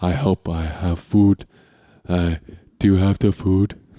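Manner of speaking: put-on dopey, dim-witted dog voice. Arguing over how the speaker's dog sounds: dumb dog voice. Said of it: "That's what he sounds like".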